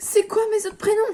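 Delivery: fed-up, annoyed yelling, swooping pitch. Marking quiz answers about herself that nobody got right: yelling in annoyance. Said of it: "Désolée si je gueule".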